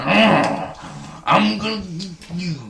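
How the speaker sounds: very slow, gruff, drawn-out American wrestler drawl. Imitating a wrestler character, which another speaker calls Macho Man. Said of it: "That's more Macho Man, Randy".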